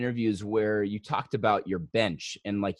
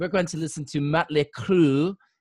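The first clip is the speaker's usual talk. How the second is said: fake French accent on English words, loud and high; 6 semitones higher, 5 dB louder than usual. Retelling how friends joked in french class: fake french accent. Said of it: "with a French accent".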